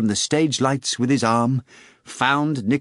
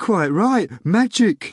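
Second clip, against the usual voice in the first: meek, embarrassed, sheepish, pitched up; 6 semitones higher than usual. Nikanor Ivanovich replies to the actor after a sarcastic heckle, sheepish. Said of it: "Nikanor Ivanovich replied sheepishly".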